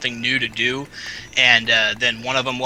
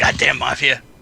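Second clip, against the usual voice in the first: bad put-on Chinese accent; 3 dB louder than usual. Voicing a mumbling character overheard at night: bad Chinese accent. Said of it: "I'm terrible with the Chinese accent".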